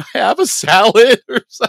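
very high-pitched, very loud, tearful, pleading wail. Retelling a terrible meal, asking for a salad instead: imitating tearful pleading. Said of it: "And I'm sitting there in tears".

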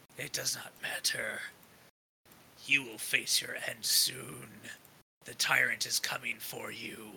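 low, very raspy growled speech. A game master voices a foe growling at the player trying to disarm him, very raspy voice. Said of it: "starts to speak in a very raspy voice".

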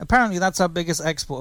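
ordinary delivery

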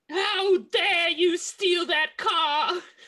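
shrill, very high, angry scream. Recalling a Harry Potter scene, imitating the screaming letter Ron gets. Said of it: "gets a screaming letter that's like".

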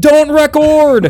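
mock shouting. Retelling how everyone on the shore shouted at the boat: imitating people shouting. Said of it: "they started shouting".

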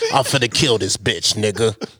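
rough, gravelly put-on voice. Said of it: "With the grizzle voice and everything".

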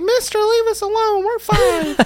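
put-on very high, slow, childlike little voice. Retelling how kids answer when urged to headbutt a pipe, high kid voice. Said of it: "They still got the high voice".

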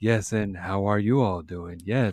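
very soothing podcast-host voice. Greeting listeners in a soothing Lex Fridman podcast voice. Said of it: "very soothing voice".

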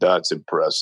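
deep, low-pitched voice. Retelling a well-known construction-company owner's remark, in a deep voice. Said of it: "with this deep voice that he has".

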